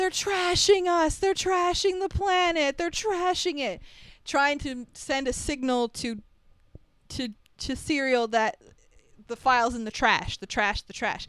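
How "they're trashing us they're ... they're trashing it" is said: put-on shrill, very high, urgent scream. Retelling a scene where one man spots another in a crowd, retelling a scream. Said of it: "he starts screaming".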